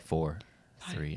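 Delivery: soft, subdued, quiet, hushed voice. Retelling a quiz round, imitating Mark Ellis's quiet countdown. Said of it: "he starts counting down, and it's very quiet".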